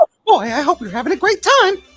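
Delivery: high-pitched cartoon mouse impression. Greeting people at a convention door: Mickey Mouse voice. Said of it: "I hope you guys enjoy that Mickey".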